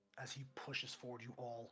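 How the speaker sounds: ordinary delivery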